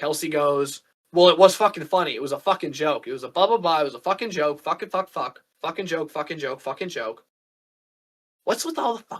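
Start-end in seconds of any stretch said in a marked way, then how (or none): none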